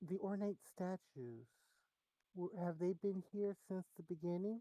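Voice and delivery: meek, sheepish, timid voice. Leaning over to ask a question in character: quiet, sheepish asking. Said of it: "kind of, uh, quietly, sheepishly".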